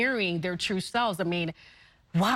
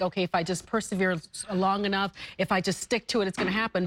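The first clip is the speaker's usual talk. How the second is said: normal talking voice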